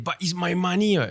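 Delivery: put-on put-out, aggrieved older man grumbling voice. Imitating people who complain about withdrawal caps, sounding like an uncle. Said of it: "You really sound like an uncle".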